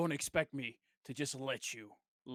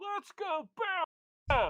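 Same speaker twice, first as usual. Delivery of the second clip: very high, swooping screamed cheer; 4 dB louder than usual. Cheering on a fighter from the side: screaming. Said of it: "I'm screaming".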